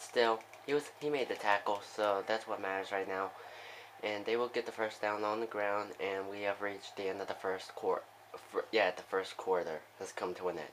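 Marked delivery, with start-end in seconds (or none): 6.0-10.7 quieter, softer, low-key voice. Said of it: "Sorry if I'm sounding more quiet now".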